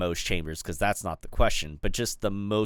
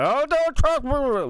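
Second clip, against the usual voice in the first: very high, very slow, with mouth full; 7 dB louder than usual. Imagining a friend shrugging off praise, imitating Ransom talking with mouth full. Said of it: "he's gonna sit there going".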